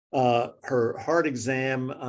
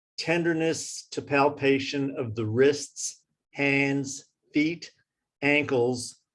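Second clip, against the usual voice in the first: slow, spaced-out dictation-like speech. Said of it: "I'm slowing down for you because I'm talking too fast".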